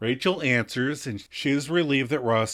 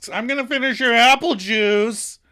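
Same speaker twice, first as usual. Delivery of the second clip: very loud, pitched-up shouted blurt; 9 semitones higher, 4 dB louder than usual. Retelling a TV scene, acting out Mark's line: super loud Mark voice. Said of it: "super loud".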